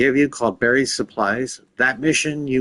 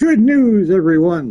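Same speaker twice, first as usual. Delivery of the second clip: high, loud announcement voice; 6 semitones higher, 6 dB louder than usual. Announcing found books to a co-player: Futurama professor voice. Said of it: "like the professor from, uh, Futurama".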